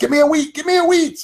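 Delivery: shrill, very high hollered yelling. Acting out a player who needs one more card: yelling at the cards. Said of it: "you're just yelling at the cards".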